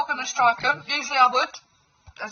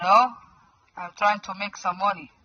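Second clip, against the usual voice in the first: put-on Arabic accent. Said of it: "I can do the accent like Waleed".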